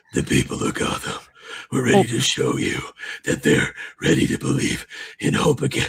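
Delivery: gravelly put-on voice, gulping air mid-line. Imitating someone who can't finish a line without a breath, gravelly put-on voice. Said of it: "He can't do the line without taking a breath. Like so, he has to go like".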